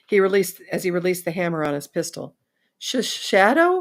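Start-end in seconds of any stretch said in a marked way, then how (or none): 2.8-3.8 very high-pitched, stammering voice. A shaken man lying on the ground repeats a name he was just told, high-pitched voice. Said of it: "he said in a high-pitched voice".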